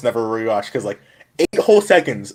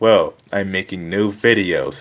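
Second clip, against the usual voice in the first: put-on unenthusiastic tone, lower; 5 semitones lower than usual. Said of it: "I sounded like this".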